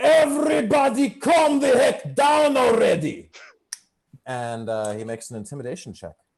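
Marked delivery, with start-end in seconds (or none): 0.0-3.3 very loud, shrill, high-pitched in-character yell. Voicing a character calming a bar crowd: yelling in character. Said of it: "And he yells".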